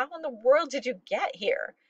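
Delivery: gasping breathy speech. A woman runs up to her grandpa, unable to believe he is there, gasping. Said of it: "she gasped".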